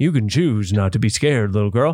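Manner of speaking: low, firm fatherly dad voice. Quoting himself to a frightened little girl, in his dad voice. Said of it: "my dad voice".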